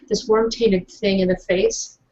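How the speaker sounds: voice dropped down low and hushed. A character telling how she beat a worm with her flashlight lowers her voice. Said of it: "She lowers her voice".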